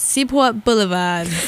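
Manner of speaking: put-on Boston accent with robotic, mechanical delivery. Imitating an automated robot voice, imitated boston accent. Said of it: "I'm going to do my best imitation of this, ... it said it in, like, a Boston accent".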